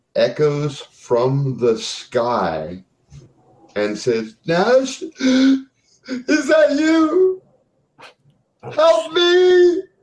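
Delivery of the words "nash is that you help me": very high, tearful, sobbing cry. Game master voicing Susie's voice echoing from the sky, sobbing with tears. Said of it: "sobbing with tears".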